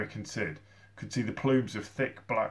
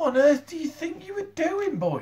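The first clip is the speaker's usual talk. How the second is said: loud, shrill, very high-pitched shouting yell; 5 dB louder than usual. Sid confronts the boy Eric after the knockout, shouting. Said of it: "Shouted Sid".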